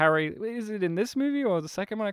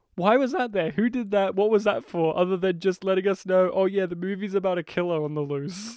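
ordinary talk

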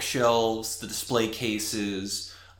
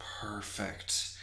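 much softer, quiet, satisfied, pleased murmur. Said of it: "She's like".

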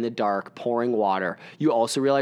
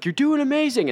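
put-on woman's yell, higher and louder; 4 dB louder than usual. Retelling how a runner stopped and cheered during a race, imitating a woman yelling.

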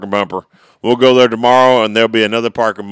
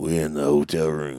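put-on deep bass, very quiet; 6 semitones lower, 10 dB quieter than usual. Recording a podcast with co-hosts, putting on a deep bass voice. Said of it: "Let me get my deep bass".

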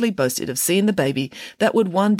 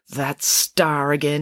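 grumbling aside to herself. A woman looks up at the bright star overhead and mutters. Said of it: "she muttered".

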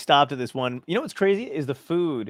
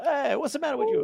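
put-on Italian accent, pitched very high; 14 semitones higher than usual. Recalling an italian driving teacher from new jersey, imitating him: italian accent. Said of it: "neither one of us had any problem doing an Italian accent".

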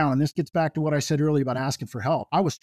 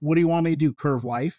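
imitated flat deadpan delivery. Retelling how their teacher answered a student asking for a curve, deadpan. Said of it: "he turned around deadpan and said".

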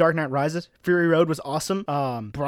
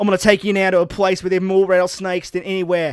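put-on loud, fast, rattled-off Australian accent; 3 semitones higher, 6 dB louder than usual. Retelling a show segment, in Steve Irwin Australian accent. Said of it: "Your Australian accent sort of fell apart there".

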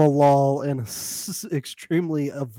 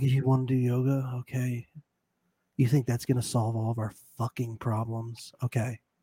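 put-on passive-aggressive voice, quieter; 2 semitones lower, 5 dB quieter than usual. Imitating someone being passive-aggressive about doing yoga: imitating Bilal being passive-aggressive. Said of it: "Bilal being a little passive-aggressive".

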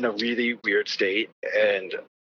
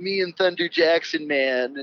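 acid-trippy hippie-dude voice; 5 semitones higher than usual. Quoting the dad's line on an album track, imitating Dennis Hopper. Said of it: "put on a Dennis Hopper voice".

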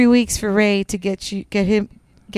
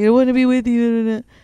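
put-on mock crying voice; 2 semitones higher than usual. Retelling how a reality show participant pleaded to get back together: imitating April crying. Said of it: "She would just cry".

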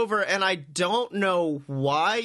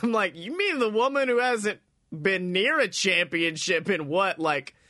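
ordinary talk

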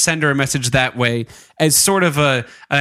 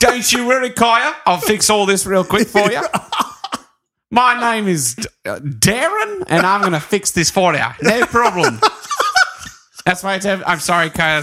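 high, attempted New Zealand accent; 5 semitones higher than usual. Playing darren, who is talking to kaya, in a put-on new zealand accent. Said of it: "That's why I have a New Zealand accent. I bet I nailed it".

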